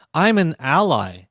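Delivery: normal talking voice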